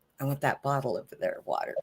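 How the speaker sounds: hushed, soft half-whisper. Retelling asking a dad for water after a ventilator: imitating own half-whisper. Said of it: "I'm trying to whisper".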